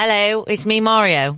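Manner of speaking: slow high British character voice. Doing a Mario impression when asked: Bob Hoskins as Mario. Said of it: "Bob Hoskins, British Mario".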